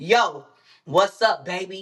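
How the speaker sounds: brash, aggressive, pushy delivery. Describing how new york men talk even when sweet, imitating aggressive talk. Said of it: "they still talking aggressive".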